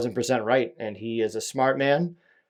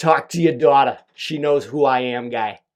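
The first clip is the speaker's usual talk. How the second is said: put-on loud, thick Boston accent turned way up; 6 dB louder than usual. Retelling the message he left for a man, in a turned-up Boston accent. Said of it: "Sometimes I like to turn up my Boston accent".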